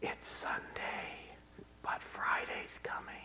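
deadly, poisonous, menacing whisper. Speaker imagines Satan whispering in people's ears, in Satan's poisonous whisper. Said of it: "Satan whispering in their ears with his poisonous, deadly voice".

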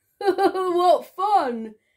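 giggling through the words, high and loud. Smiley Shark watches Starfish twirling and dancing, giggling. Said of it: "giggled Smiley Shark".

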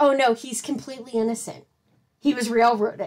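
normal talking voice

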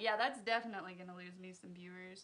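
ordinary talk

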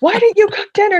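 all-out, shrill, very loud screaming. Acting out coming home late to a partner who hasn't cooked: imitating screaming at someone. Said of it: "screaming at him and being like".

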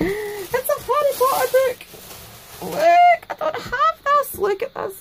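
very high, swooping, delighted, excited squealing. Opening a Harry Potter book from Denise, excited squealing. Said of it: "Sorry, I'm squealing".

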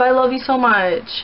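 ordinary talk

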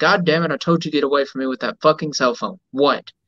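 ordinary delivery

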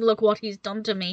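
plain

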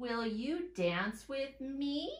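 question-like rising pitch on the final "me". Demonstrating how a question sounds in a lesson: rising pitch on final me. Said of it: "You heard my voice go up at the end".

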